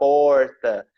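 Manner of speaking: R in porta said with a Goiás accent. A speaker from Goiás showing how they say the word, pulled Goiás R in porta. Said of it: "lá a gente fala muito o ai, a gente puxa o R, então a gente fala porta".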